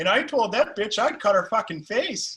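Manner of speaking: Wisconsin accent. Showing how the Wisconsin accent really sounds in shitty bars: Wisconsin accent. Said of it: "I know it sounds a lot more like".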